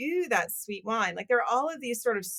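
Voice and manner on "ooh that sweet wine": sneering, disdainful, contemptuous scoffing "ooh". Retelling how the wider wine industry mocks brands: imitating sneering wine critics. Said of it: "gives a ton of shit to".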